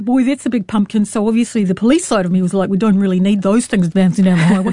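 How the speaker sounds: put-on plainly spoken New Zealand accent. Retelling a local police lieutenant's quote, said in a Kiwi accent. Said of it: "if you can say what he said with a Kiwi accent".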